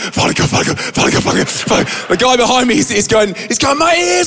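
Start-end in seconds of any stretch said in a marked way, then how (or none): 0.0-2.1 mock-panicked, frantic voice. Retelling a frightening moment, imitating the man next to him praying in panic. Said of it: "he's like this".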